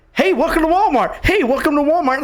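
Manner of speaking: put-on overly excited, mock-excited voice. Retelling a walmart greeter welcoming him in: imitating an excited greeter. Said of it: "that he was excited".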